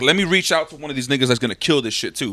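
normal talking voice

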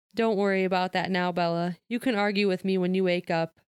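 ordinary delivery

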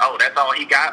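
ordinary talk

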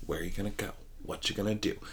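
low, hushed, creepy robotic voice. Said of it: "She's got that deep, weird, like, creepy, robotic voice".

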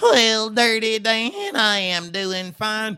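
cartoonish pig voice. Showing how the two pig brothers talked to each other: Dusty pig voice. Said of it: "I played these two pig brothers".

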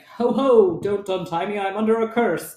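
jolly, hearty, cheerful delivery. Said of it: "because he talks like that in my head".

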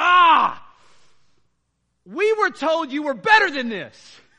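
very loud, high, drawn-out exasperated, frustrated yell. Recalling what he yelled at them in the third quarter, retelling a frustrated yell. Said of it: "He yells in this, he was so frustrated".

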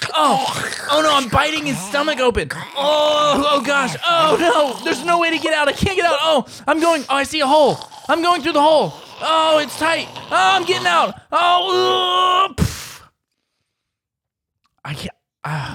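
very high, loud, swooping, overdramatic straining voice. Acting out being a frog killing someone from inside: dramatic, struggling narration. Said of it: "That was dramatic".

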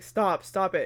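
ordinary talk

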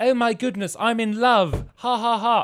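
put-on very high, very loud, shrill, thick English accent. Speaker imitates a prince character's voice actor, in a very english accent. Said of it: "the most English guy ever".

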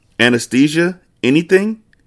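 trembling, shaky, high-pitched voice. Franklin turns to the doctor, in a shaky voice. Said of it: "Franklin said in a shaky voice".

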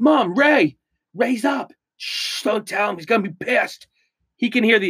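careless, loud, high, full-voice blurt. Recounting coming upstairs and calling out to Mom, re-enacting saying it loudly. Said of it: "I said it just as loud as I just said it on this podcast".

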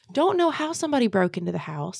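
ordinary talk, nothing marked

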